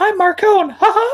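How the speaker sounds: squeaky voice, high and bright. Discussing audiobook narrators, suggesting how a character should be read: Mickey Mouse voice. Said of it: "now I want Marcone with the Mickey Mouse voice".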